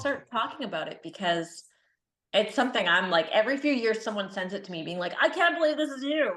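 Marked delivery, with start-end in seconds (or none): 5.2-6.4 high, funny, comic put-on character voice. Quoting people who send the clip in disbelief: Kermit-like voice. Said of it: "What if you heckle people in that voice?".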